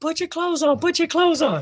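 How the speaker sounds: frantic, shrill, very high acted-out scream. Retelling how she screamed at him to get dressed: imitating someone screaming. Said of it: "So she starts screaming".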